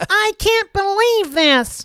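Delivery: very high, squeaky helium voice, angry and indignant. Joking about how upset he would get over a sale, imitating Jeff Wilson mad, in a helium voice. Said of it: "it goes like helium when he gets mad".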